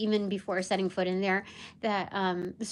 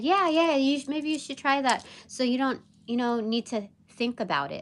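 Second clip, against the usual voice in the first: mock patronising, sly, condescending tone; 4 semitones higher than usual. Retelling what a coworker said about email groups: imitating a condescending tone. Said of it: "so, like, condescending and underhanded in the way she just said it".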